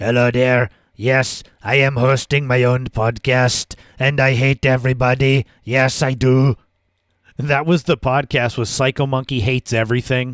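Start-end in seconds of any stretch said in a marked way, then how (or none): 0.0-6.6 gravelly, distinct character voice. Showing listeners who don't know the skits how the podcast host sounds, in a distinct, gravelly PsychoMonkey voice. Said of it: "distinct, gravelly voice".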